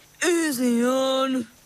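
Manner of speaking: boggy, marshy, swampish eel voice. An eel speaks up as the bell it's tied to is pulled harder; swampish voice. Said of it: "he said in a swampish voice".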